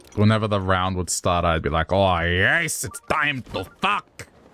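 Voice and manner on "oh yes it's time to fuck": slow, drawn-out, poorly done cartoon villain voice. Recalling what they'd say as Mario Party rounds started: Wario voice. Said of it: "That doesn't even sound like Wario".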